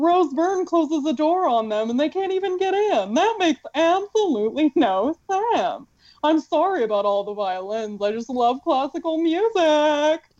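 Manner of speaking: high, sing-song, swooping cutesy cartoon voice. While reviewing a movie, the speaker talks in a Powerpuff Girls voice. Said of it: "some variation on this same Powderpuff Girls voice".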